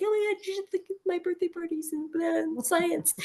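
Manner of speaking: mock high gushing babble.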